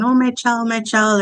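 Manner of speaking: frantic, panicked scream. Recounting a mother on the shore who couldn't swim; retelling her scream. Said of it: "she's screaming".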